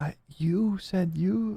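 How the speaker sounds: whispered voice. Voicing a character who whispers to the others, confused: whispering. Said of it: "he sort of just whispers to you".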